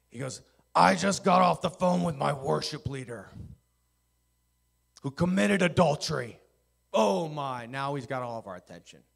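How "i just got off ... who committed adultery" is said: furious, loud, gravelly, rough voice. Retelling what an angry man told the group, imitating an angry man. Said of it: "He's angry".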